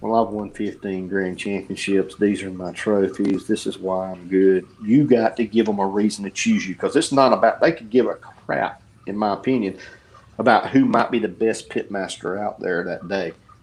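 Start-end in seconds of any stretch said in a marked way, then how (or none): 0.0-4.7 flat, uninflected monotone delivery. Showing how a dry pitmaster video sounds, speak in a monotone voice. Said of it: "sit there in a monotone voice and say".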